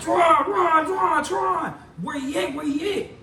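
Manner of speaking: high, repeated yelling of one word. Speaker retells searching for Tron after finding blood, retelling a yell. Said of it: "I'm yelling".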